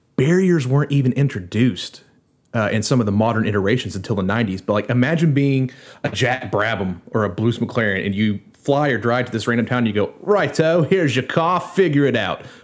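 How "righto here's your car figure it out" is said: offhand, put-on London Cockney accent, raised pitch. Imitating someone handing a driver a car in a random town: Cockney accent. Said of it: "Forgive my Cockney accident, accent".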